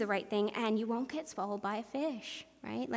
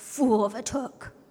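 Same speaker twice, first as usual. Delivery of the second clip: drawn-out, slow, loud wizard voice; 8 dB louder than usual. Retelling a scene, the speaker quotes the wizard's classic line in a deep Gandalf voice. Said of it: "That's about as deep as my voice will get".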